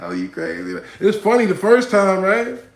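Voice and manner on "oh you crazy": amused, said through a laugh. Retelling how she answered after the trip to the bathroom: imitating her laughing reply. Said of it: "She laughed, like".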